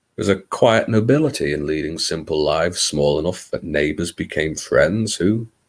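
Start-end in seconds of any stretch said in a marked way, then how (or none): none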